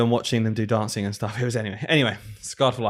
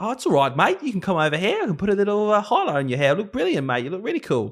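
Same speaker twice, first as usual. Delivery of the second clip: put-on Australian accent, high and swooping; 9 semitones higher than usual. Retelling what a woman said to persuade them, put-on australian accent. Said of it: "That was me doing her accent, by the way, uh, from Australia".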